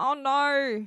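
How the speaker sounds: brief attempted Australian accent. Wondering whether Australians say the phrase, trying it: attempted Australian accent. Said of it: "I'm trying to think of an Australian accent".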